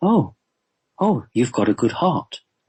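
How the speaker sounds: startled, marvelling, quite surprised, wondering tone. Retelling what he said on reaching the speaker's heart, imitating a surprised voice. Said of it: "he said in a quite surprised voice".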